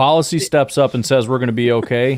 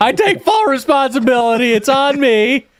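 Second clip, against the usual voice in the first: put-on shrill, very high scream; 4 dB louder than usual. Acting out the coach after losing seventh-round picks, from the back: imitating Matt LaFleur screaming. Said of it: "He's screaming from the back".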